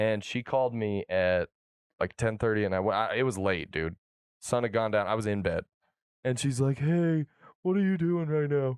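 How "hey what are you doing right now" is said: high, tearful, bawling voice crying through the words. Retelling a late-night call from a girl: imitating someone bawling. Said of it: "Crying. Bawling, crying".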